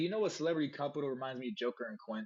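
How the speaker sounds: plain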